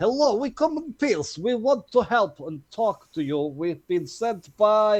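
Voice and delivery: welcoming, friendly, high calling shout. A player's character waves a flag and calls out to strangers, Redwall shouting. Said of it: "Redwall will shout".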